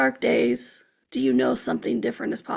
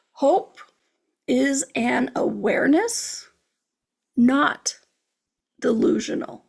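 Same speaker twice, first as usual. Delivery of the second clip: slow, deliberate, emphatic, drawn out for impact. Presenting a favorite point about hope to listeners, said slowly for impact. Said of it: "I said that one slowly for impact".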